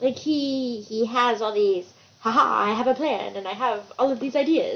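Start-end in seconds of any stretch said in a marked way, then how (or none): 2.2-4.8 put-on vampire voice, faster. Mimicking a character who rarely leaves his tower, in a Dracula voice. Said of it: "it was a Dracula voice there?".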